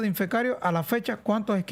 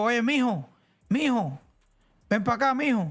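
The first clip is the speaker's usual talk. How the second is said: Cuban central-provinces accent; 2 semitones higher than usual. A speaker from central Cuba demonstrating the local way of talking, central Cuban accent. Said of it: "Es el acento este de decirle a la persona mucho".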